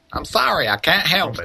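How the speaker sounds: very high-pitched hillbilly character voice. Voicing the character Neelia, who keeps causing trouble, in a redneck voice. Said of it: "I turned Nee into a redneck just now".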